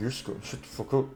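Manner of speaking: very quiet, irritated whisper under the breath. A player voices the character Thorn answering strangers, muttering under his breath. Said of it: "Like under his breath".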